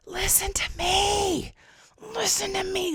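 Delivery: mock, very high, shrill, gut-wrenching desperate cry, "me" drawn out. Retelling standing at the front of the room: imitating own gut-wrenching scream. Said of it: "and I screamed".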